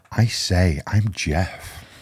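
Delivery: very slow, faked accent avoiding Liverpool Scouse. Introducing himself at the start of a chat: put-on less Liverpool-sounding voice. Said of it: "He sounded remarkably less Liverpoolian then".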